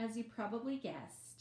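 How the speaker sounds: plain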